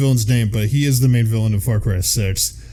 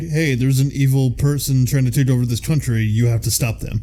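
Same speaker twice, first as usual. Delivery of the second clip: normal talking voice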